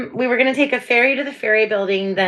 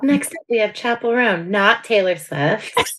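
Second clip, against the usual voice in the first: corporate top forty radio DJ announcer patter. Asked whether she could do a radio voice, the speaker tries a radio dj voice. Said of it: "a voice? I bet you could do that well".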